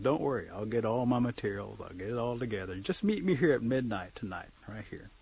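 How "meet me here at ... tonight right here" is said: ordinary delivery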